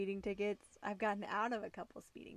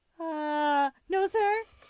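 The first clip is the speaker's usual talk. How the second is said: put-on nervous voice, much higher, louder; 7 semitones higher, 11 dB louder than usual. Retelling being pulled over for the first time, answering the officer: retelling own nervous reply. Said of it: "And I was just like so nervous".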